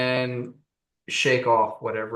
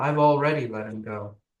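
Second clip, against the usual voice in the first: sorrowful, mournful delivery, close to tears. A game narrator voices a woman with tears on her face, in a mournful tone. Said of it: "says in a mournful tone".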